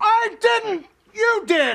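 high, drawn-out shouting yell. Arguing over an oversized raw milk order, one character yells back at the other: yelling. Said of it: "why are you yelling at me?".

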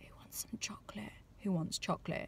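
muttered under breath. Showing how they ask the others for chocolate, mumbled under the breath. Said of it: "just mumble".

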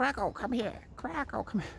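very high put-on cackling witch voice. Mocking a woman calling her dog, speaker does a Wicked Witch of the North voice. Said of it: "Like putting on some kind of witch's accent".

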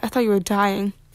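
plain

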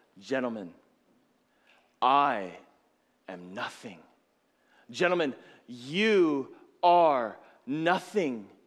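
put-on earnest whisper. Telling a story of a man addressing his orchestra after an ovation, retelling an earnest whisper. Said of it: "he's speaking earnestly in a whisper".

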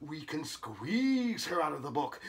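usual speaking voice

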